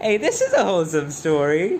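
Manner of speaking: voice cracking mid-line. Commenting on a story, voice cracking. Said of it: "don't mind the voice crack".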